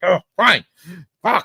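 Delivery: fed-up, exasperated giving in, pitched very high. Retelling how a villain finally gave up after endless annoyance: imitating an exasperated Dormammu giving up. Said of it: "Dormammu finally gave up".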